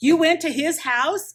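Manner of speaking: high, loud, breathless, hyperventilating panic.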